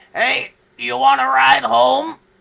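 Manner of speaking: creaky, croaking frog voice. Retelling a driver in a red Corvette offering a ride home, in a croaky frog voice. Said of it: "this frog voice, like a rejected Disney villain, croak out".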